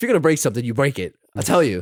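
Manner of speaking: angry, stern, scolding tone, acted out. Retelling a movie scene: imitating angry Stone. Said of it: "Stone's so mad".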